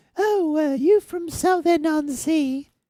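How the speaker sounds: put-on thick London Soho accent, very high pitch. Retelling what the lady at the counter asked: imitating a strong Soho accent. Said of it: "the lady at the counter who has a very, very strong, you know, accent".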